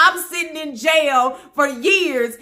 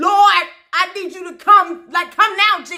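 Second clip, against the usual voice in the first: ordinary talk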